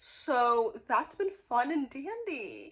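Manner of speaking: slow, openly sarcastic delivery. Remarking that nobody seems to care about the videos: sarcastic. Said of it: "I'm being sarcastic".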